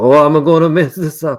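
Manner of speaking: very loud, high character voice. Describing a scene with Channing Tatum as the face, doing his Gambit voice. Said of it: "doing his Gambit voice".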